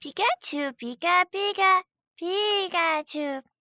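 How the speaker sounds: very high, slow, drawn-out creature squeak. Showing how they say the name, Pikachu voice. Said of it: "I say it in a bad impression of Pikachu's voice".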